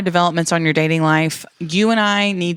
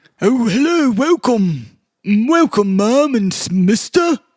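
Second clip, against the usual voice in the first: high, common-sounding, working-class butler voice; 5 semitones higher than usual. Posing as a butler to throw someone off the scent, greeting guests: working-class butler voice. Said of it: "you're too working class".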